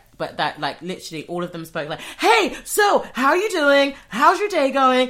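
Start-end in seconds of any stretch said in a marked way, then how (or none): 2.2-5.1 high, loud, slow, overenthusiastic gushing American voice. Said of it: "Stop shouting".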